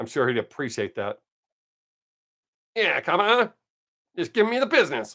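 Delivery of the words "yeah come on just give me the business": put-on old-time 1950s tough-guy gangster voice. Suggesting how to talk if pulled over by the cops, in a 1950s gangster voice. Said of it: "Talk like a 1950s gangster".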